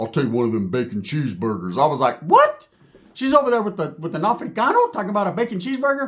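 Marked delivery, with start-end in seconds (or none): 0.0-1.8 big deep voice, quiet, commanding. Retelling what someone ordered after being asked, in a big, deep voice. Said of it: "I heard a big, deep voice say".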